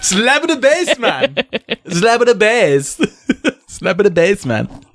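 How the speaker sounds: put-on Jamaican accent. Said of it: "do they all sound Jamaican?".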